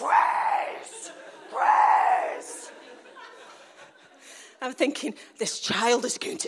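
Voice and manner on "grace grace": cross, angry, shouted calling-out. Retelling chasing a child down the street: retelling angry shouting. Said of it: "then the anger set in".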